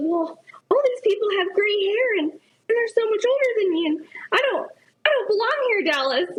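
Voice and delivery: high-pitched whine.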